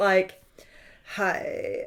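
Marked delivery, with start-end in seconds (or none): 1.1-1.9 rumbling, creaky fry at the back of the throat. Explaining a vocal trend to a friend, the speaker demonstrates vocal fry. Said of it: "Vocal Fry was when we went".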